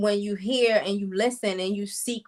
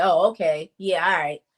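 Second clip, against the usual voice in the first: sarcastic, mocking tone, lower pitch; 3 semitones lower, 3 dB louder than usual. Giving an example of what someone in sarcasm mode says, sarcastic. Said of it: "you being sarcastic".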